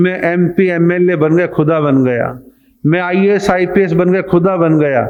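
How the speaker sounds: usual speaking voice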